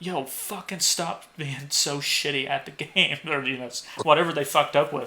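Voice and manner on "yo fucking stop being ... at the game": heckling, mild, drawn-out holler. Retelling screaming at bad players during a basketball game: imitating own past screaming. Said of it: "at the top of my lungs, scream something at 'em".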